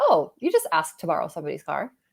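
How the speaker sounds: ordinary delivery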